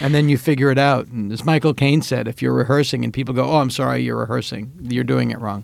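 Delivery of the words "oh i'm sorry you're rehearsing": normal talking voice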